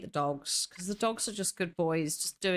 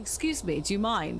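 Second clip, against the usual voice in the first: courteous, polite, put-on, very British accent; 3 semitones higher than usual. Showing one way they get really British about it, in a put-on British accent. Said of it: "Sometimes I get really British about it".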